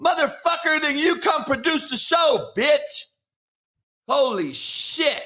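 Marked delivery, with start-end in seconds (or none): 0.0-3.0 put-on angry rant, higher pitch. Answering a viewer's question about the show's schedule: mock angry rant. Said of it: "Why are you so mad, dog?".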